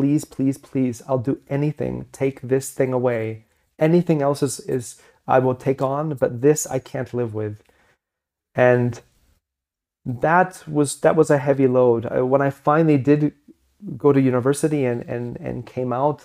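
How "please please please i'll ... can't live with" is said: put-on desperate, begging tone. Retelling a past prayer to have this taken away: retelling own desperate pleading prayer. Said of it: "like crying and, and being, like, pleading".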